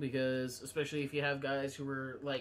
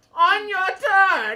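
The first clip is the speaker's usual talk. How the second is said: booming, shrill, very loud wizard voice, "turn" stretched; 18 dB louder than usual. Repeating another player's rule reading: imitating a wizard voice. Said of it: "that's your wizard voice?".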